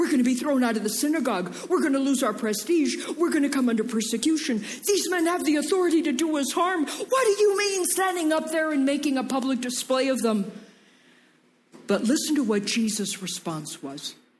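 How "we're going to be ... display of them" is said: put-on, frantic, alarmed, high, panicked voice. Retelling the disciples warning Jesus about the offended Pharisees, acting out their panic. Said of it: "Can you hear the panic in their voice?".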